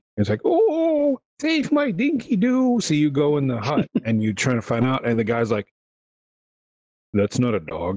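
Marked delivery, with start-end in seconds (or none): 0.4-2.8 very high, very slow, bad fake old-lady voice. Mimicking an old lady whose voice sounds like a bad impression, put-on old lady voice. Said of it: "her voice is like, you hired the intern that gets you coffee to do an impression of an old lady".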